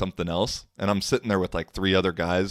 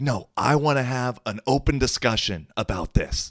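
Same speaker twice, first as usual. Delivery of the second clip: put-on yell, higher; 5 semitones higher than usual. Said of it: "like, yelling".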